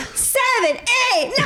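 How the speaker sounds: blaring shout.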